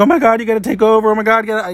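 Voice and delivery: mock frantic panic, very high-pitched. Retelling a driver stalling as a car approached, imitating someone freaking out. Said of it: "she was like freaking out".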